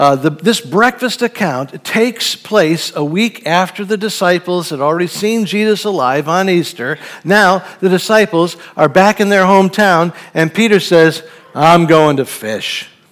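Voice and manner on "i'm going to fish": beaten-down, unexcited, defeated and discouraged tone. Speaker retelling the disciples' story after Easter, acting out Peter's defeated tone. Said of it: "with a defeat in his voice".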